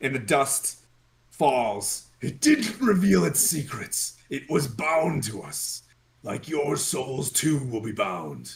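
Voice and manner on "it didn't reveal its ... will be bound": solemn, weighty, dead-serious voice. Voicing an unseen presence demanding secrets: too serious booming voice. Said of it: "I shouldn't use that voice".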